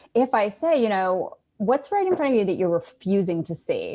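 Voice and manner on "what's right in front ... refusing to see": judgmental, finger-pointing tone with swooping pitch. Speaker demonstrating how to put judgment into the voice, judgmental tone. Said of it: "I can put a sense of judgment in my voice".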